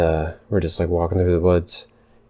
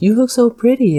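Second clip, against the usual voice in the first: put-on very high, loud, cooing baby talk; 5 dB louder than usual. Retelling a neighbor chatting to a dog: imitating neighbor talking to a dog. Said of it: "she had a full-fledged conversation with my dog".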